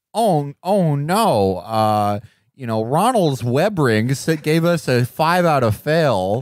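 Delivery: put-on anxious, fretting nerd character voice. Describing a classic TV scene, a speaker voices its nerd character: nerd character voice. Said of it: "the nerd character is like".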